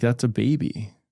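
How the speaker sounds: normal talking voice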